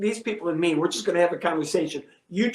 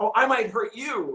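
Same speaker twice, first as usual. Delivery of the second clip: put-on toned-down mild shouted yell; 4 semitones higher than usual. Retelling a clash with a heckler at his show: retelling own yell. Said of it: "and I'm yelling at him".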